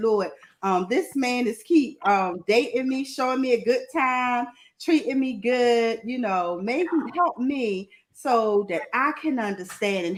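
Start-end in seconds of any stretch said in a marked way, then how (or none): none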